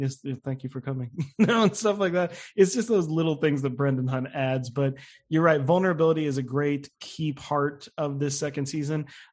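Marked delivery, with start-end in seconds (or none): 0.0-1.1 muttered under the breath, much quieter. Describing a TV doctor's aside during a scene, muttered under his breath. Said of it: "really under his breath".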